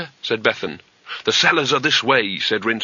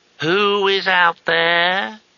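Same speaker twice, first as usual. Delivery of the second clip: drawn-out, very slow, high-pitched; 8 semitones higher, 3 dB louder than usual. A voice behind the door answers a shout, very slowly. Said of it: "very slowly".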